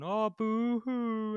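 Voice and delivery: very high, loud, scornful mocking crybaby boo-hoo taunt. Retelling how the villain taunts a crying Rocket: imitating a villain mocking crying. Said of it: "When Rocket's crying and he's going".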